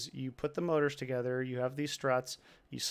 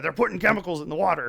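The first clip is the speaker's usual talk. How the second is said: loud, full, rasping, rough-throated delivery; 3 semitones higher, 6 dB louder than usual. Starting an impression with the usual opening line: Alex Jones voice. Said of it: "I always have to start with".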